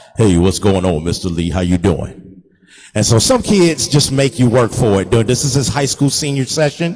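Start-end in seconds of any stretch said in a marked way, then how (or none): 0.2-2.5 deep, low big-guy voice. A photographer recalls a high school senior he photographed, imitating Ed's deep voice. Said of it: "This is how he talked".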